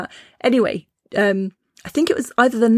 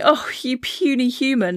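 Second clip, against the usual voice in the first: slow, scornful, mocking jeer with laughter; 4 semitones higher than usual. Retelling how a grown person laughed at them, imitating someone laughing mockingly. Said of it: "this like fully grown person laughing at me".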